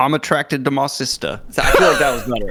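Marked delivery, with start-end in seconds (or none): 0.0-1.4 attempted, put-on British accent. After friends say the first try sounded Dutch, another go: put-on British accent. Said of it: "Let me try this".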